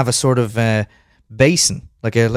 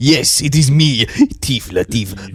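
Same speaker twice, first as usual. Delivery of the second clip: very slow put-on French accent. A performer goes back to speaking like a French person as the character; Tif Latif French accent. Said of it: "back speaking like a French person".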